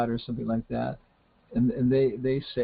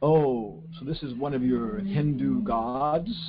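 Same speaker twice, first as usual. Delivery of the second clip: slow, mocking, sarcastic tone. Retelling what a man said on seeing a picture, imitating a sarcastic remark. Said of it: "this guy kind of sarcastically said".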